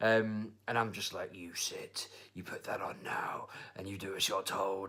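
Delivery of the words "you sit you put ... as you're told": put-on angry voice, quieter. Retelling what he said to the hairdresser, mock-angry Liam Neeson voice. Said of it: "doing my best Liam Neeson / Batman impression".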